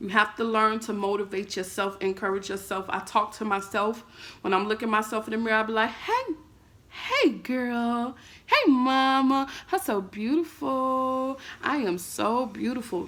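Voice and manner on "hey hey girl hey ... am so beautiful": put-on very slow, sing-song baby talk. Acting out talking to oneself in the mirror: baby talk. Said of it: "I literally talk to myself like I am a baby".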